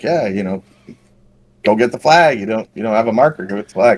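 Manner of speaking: ordinary talk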